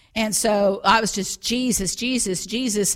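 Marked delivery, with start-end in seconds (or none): none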